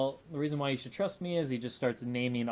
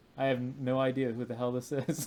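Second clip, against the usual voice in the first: put-on dry, flat, expressionless monotone delivery. Speaker retells a scene where a man looks into a mirror, retelling a deadpan line. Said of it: "just deadpans".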